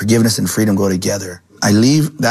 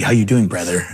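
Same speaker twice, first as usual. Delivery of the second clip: smug, cocky, arrogant, full-of-himself tone. Retelling how an arrogant man greeted him: imitating a cocky greeting. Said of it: "Like, cocky".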